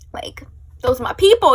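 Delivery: fervent, loud, rushed, breathy whisper.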